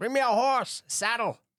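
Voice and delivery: shouting. Voicing a character who leaves the tent, yelling for a horse. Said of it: "he's yelling for a horse".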